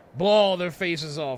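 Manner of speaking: ordinary delivery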